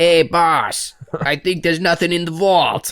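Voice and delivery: exaggerated New York accent. Imitating the movie's thugs talking to their boss: comical New York accent. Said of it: "it's comical New York accents".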